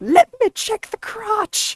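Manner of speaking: put-on shrill grandma voice, very high and loud. Retelling how Grandma checked the crotch of the pants in the store, loudly imitating Grandma. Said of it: "she would always very loudly be like".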